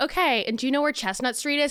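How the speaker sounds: very calm steady voice. Retelling a phone call, the speaker quotes the man on the line, imitating someone very calm. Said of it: "So I'm just scream crying into the phone".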